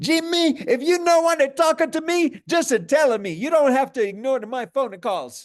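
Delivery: put-on very high, loud, slight, light Italian accent. Retelling his mom's third voicemail to him, imitating her light Italian accent. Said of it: "she had a little bit of an Italian accent".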